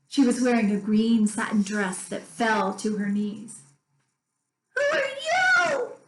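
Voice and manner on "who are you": very high, doll-like voice. Narrator reads a china doll greeting her new shelfmate, in a high-pitched doll voice. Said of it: "she said in a high-pitched voice".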